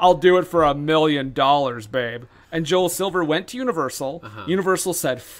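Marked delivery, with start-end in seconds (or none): 0.0-2.2 sarcastic, clearly not meaning it. Retelling how a man answered an offer to make a movie: mock-sarcastic retelling.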